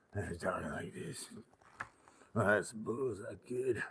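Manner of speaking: very quiet, whiskey-soaked put-on voice. Inventing an outlaw name and trying out a new voice: whiskey-soaked voice. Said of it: "I want a whiskey soak voice".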